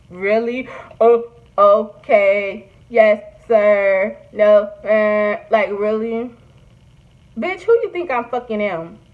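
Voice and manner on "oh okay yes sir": very slow, flat, emotionless monotone drone. Showing how to answer a husband, the speaker talks in flat monotone. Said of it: "only speak in monotone".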